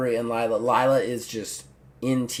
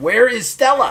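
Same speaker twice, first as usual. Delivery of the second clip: very high, loud, exasperated frustrated outburst; 10 semitones higher, 7 dB louder than usual. The storyteller voices Aubrey getting more and more frustrated, frustrated Aubrey. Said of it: "getting more and more frustrated".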